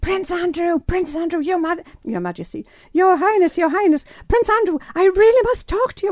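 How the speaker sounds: put-on screeching shout. Recalling shouting from the barrier to get a royal's attention, retelling a screeching shout. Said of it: "I'm screeching to the point where I can hardly speak".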